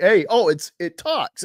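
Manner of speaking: loud, high-pitched, flamboyant, showy, dismissive offhand delivery. Retelling a scene from the first Iron Man movie: dismissive, flamboyant Iron Man voice. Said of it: "he's just so dismissive and flamboyant".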